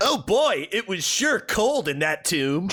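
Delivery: high cartoony voice. Joking that Jesus speaks in a Sonic the Hedgehog voice. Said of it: "he's doing the Sonic voice".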